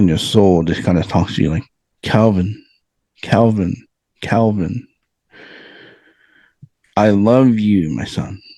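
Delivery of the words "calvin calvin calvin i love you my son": very slow, gentle, still voice. Telling a podcast host about an inner voice speaking to you, still soft voice. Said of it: "that still soft voice in your heart".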